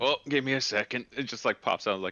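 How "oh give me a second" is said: put-on, ghostly, spectral dwarf voice. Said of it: "Just imagining the spectral dwarf just fucking like".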